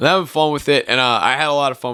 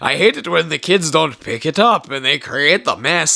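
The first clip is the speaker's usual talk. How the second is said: heavy, thick put-on Irish brogue, laid on; 4 semitones higher than usual. Retelling a movie scene where a character talks: imitating a thick irish accent. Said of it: "really thick Irish accent going".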